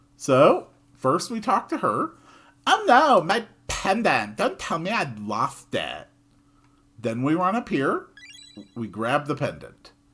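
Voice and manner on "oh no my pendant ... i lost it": put-on pitched-up valley girl voice. Giving a game character a voice while playing through the scene, in a Valley Girl voice. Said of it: "I think the Valley Girl voice".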